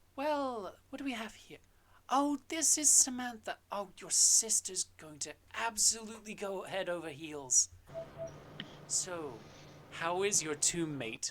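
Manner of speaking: sweet kindly voice. Voicing a character who returns to her usual sweet manner, sweet cinnamon-roll voice. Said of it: "goes back to like her usual like cinnamon roll like type aesthetic".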